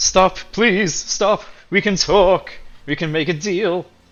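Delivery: begging, pleading tone. Voicing a surrounded enemy who drops his weapon: pleading to surrender. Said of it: "drops his scimitar and holds his hands up and".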